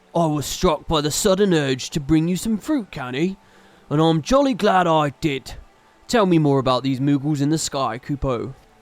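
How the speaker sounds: deep, low-pitched voice. Reading game dialogue aloud, giving a character a voice; deep voice. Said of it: "Should we give him a deep voice?".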